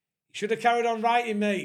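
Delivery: very loud, high heckling shout. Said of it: "just shouted".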